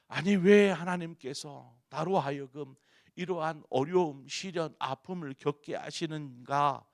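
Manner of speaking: loud, high, resentful complaining.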